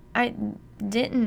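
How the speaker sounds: stammering, stuttering, faltering speech. A mother answers her husband's accusation as he holds a gun, stammering. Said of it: "Mom stammers".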